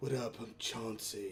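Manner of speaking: very low, deep character voice. Voicing the character Chauncey introducing himself: Chauncey voice. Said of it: "I don't think I gave him that voice".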